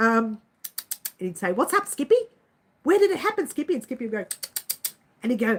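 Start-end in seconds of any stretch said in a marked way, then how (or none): 1.5-3.7 put-on very high young boy's voice. Recalling an old kangaroo show, quoting its boy in a little boy voice. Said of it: "the little boy would say".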